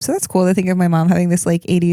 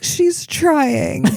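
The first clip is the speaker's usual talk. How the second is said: high-pitched, tearful, weepy, crying voice; 8 semitones higher than usual. Imagining how mom would defend her in court: imitating mom crying. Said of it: "my mom would just cry and be like".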